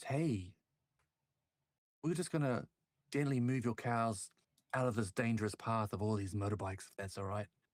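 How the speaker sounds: kindly, gentle-toned, mild-mannered voice. Playing Nico, easing up to a rancher to move his cows: soft voice. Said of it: "in a soft voice".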